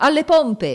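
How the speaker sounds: booming, high, thunderous shout. Reading a shipwreck story, the captain's voice calls out to the sailors: thundering shout. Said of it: "Una voce tonante gridò".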